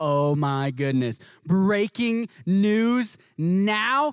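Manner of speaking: very slow, drawn-out, rising, stunned, jaw-dropped disbelief. Acting out a tv viewer hearing breaking news: jaw-dropped amazement. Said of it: "your jaw is dropped and you're like".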